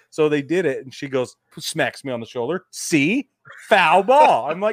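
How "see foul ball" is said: very loud, utterly earnest, dead-serious voice. Retelling her insisting on what she heard: imitating someone dead serious. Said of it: "And she was so serious".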